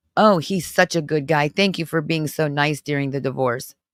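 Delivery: ordinary delivery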